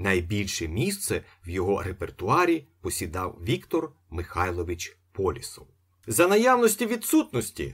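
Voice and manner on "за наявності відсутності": irritated bird voice, very high and loud. Reading an old bird's words after agents take its mistress away; irritated. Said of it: "роздратовано сказав птах".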